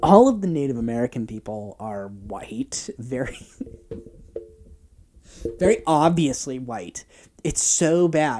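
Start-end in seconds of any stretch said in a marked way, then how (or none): 0.0-7.0 words breaking up with laughs throughout. Describing an old film's casting, laughing while talking. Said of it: "the reason I'm laughing".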